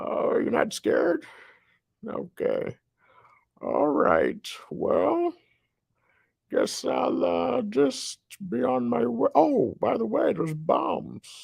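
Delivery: very high, raspy, scratchy, rough villain voice. Speaker performs as Bane for an audience that isn't scared, in a scratchy voice. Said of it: "It's kind of a scratchy voice".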